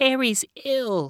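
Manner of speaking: trembling, quaking, very high-pitched voice. Narrator reads a woman answering the landlady's complaint: quaking. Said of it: "Miss Dembecki quaked".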